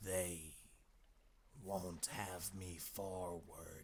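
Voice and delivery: odd, slow, hoarse, hushed rasping words, drawn out. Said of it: "He spoke slowly, with a queer, hoarse quality in his voice".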